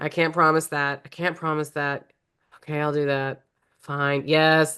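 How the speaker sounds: mock-reluctant, grudging tone. Describing a character who is asked for favors, mimicking his grudging yes. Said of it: "you can hear it in his voice. It's like he hates that he's saying yes".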